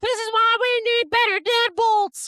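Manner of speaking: acted, very high, shrill yelling. Retelling how a parent yelled about the deadbolts: imitating someone yelling. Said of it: "she's yelling at my dad".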